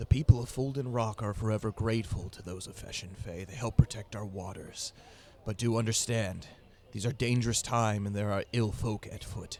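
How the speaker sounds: hushed secretive stage whisper. Storyteller voices a character coming close to speak to Thornton, secretive whisper. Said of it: "he whispers to Thornton".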